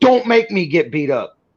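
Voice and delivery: mock nasty, threatening tone. Recalling a sweet remark to her that comes out mock-threatening. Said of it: "the way I say it, it sounds like I'm being a horrible fucking dickhead".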